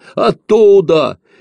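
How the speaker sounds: shrill, very high, loud, teasing, mocking voice. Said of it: "передразнил его Ефимка".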